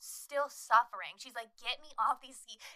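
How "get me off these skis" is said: ordinary talk, nothing marked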